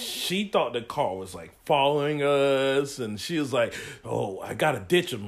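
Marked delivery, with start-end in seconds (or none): 4.0-5.3 put-on 1950s mobster talk. Retelling the girlfriend's words when she thought a car was following them, in a 1950s mobster voice. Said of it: "talk like a nineteen fifties mobster".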